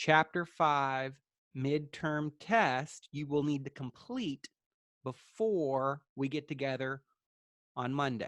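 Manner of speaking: slowed-down delivery. Repeating the class schedule because students report freezing, speaking more slowly. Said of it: "say it more slowly for everybody".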